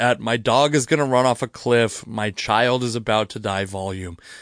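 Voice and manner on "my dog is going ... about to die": ordinary talk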